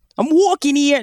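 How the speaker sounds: clumsy, bad put-on New York accent. Talking about bad accents, the speaker launches into a bad new york accent. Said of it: "bad New York accents".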